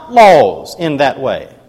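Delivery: ordinary delivery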